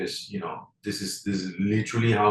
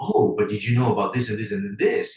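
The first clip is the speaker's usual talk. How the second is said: put-on excited voice, louder; 4 dB louder than usual. Acting out how Ivan joins a conversation: imitating Ivan. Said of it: "you do a very good imitation of Ivan".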